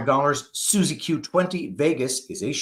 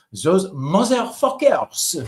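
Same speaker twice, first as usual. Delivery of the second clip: put-on French accent; 4 semitones higher, 4 dB louder than usual. Demonstrating how someone should say a line, French accent. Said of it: "say it in a French accent".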